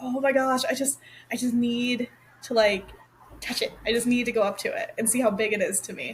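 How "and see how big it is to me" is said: normal talking voice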